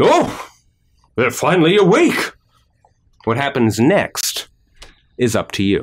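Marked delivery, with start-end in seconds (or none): 0.0-2.3 booming loud bellow, high and swooping. Game narrator voicing a man bringing towels who sees everyone awake, loud bellow. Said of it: "Loudly, he bellows".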